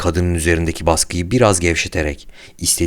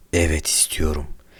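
near whisper, quieter; 5 dB quieter than usual. Jill answers a horrified Samantha, almost whispering. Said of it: "dedi Jill fısıltı gibi çıkan bir sesle".

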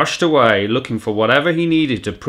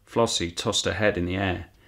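plain reading voice

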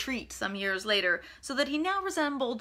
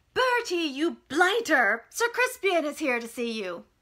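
high, loud holler like a governess; 5 semitones higher, 4 dB louder than usual. Narrator reads her calling into the conservatory for Bertie: yelling like a governess. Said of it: "raised her voice in the manner of a governess and yelled".

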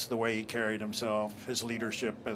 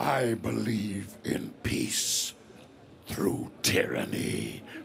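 rough, creaky, raspy robot villain voice; 4 dB louder than usual. Asked for a favorite line to say in character, delivering it in the Megatron voice. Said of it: "in the Megatron voice".

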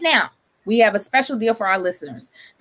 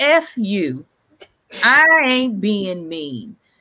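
put-on mean, harsh, very slow and drawn out. Retelling a show host's reply to a caller, imitating a harsh voice. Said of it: "the harshness in his voice".

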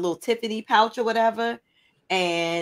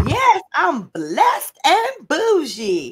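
very high, slow, swooping, drawn-out scream; 9 semitones higher, 6 dB louder than usual. Retelling how someone started screaming a line: imitating someone screaming. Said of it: "Mel just started screaming".

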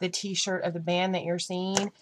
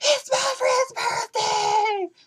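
put-on, very high, drawn-out, sloshed party yell; 4 dB louder than usual. Retelling how a drunk girl at a concert kept yelling: imitating a drunk girl yelling. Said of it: "she yelled every time it got quiet".

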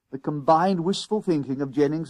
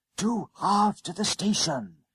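stage whisper, slightly high pitch; 6 semitones higher than usual. A boy speaks to a conductor who is tapping his foot impatiently; soft half-whisper. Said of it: "Jennings whispered softly".

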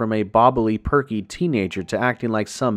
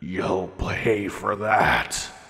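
snarling, growling beast voice; 2 semitones lower, 4 dB quieter than usual. Narrator reading a story, a coyote threatening Lita, growling. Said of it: "it growled out".

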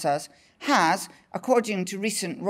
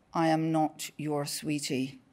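low, quiet, veiled, vaguely threatening tone; 4 semitones lower, 5 dB quieter than usual. Recounting your answer to a man who called you sweetie, retelling a low, vaguely threatening tone. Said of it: "in the low and vaguely threatening tone I have polished over years".

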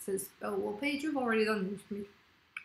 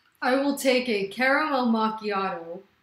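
very loud, fake, put-on American accent; 10 dB louder than usual. Asked for an American saying, repeating an order in a put-on American accent. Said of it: "someone wanted me to do an American accent".

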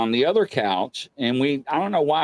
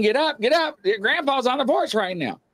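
urgent high-pitched screaming; 11 semitones higher than usual. Retelling trying to wake someone who won't get up, re-enacting a scream. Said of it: "And I'm screaming".

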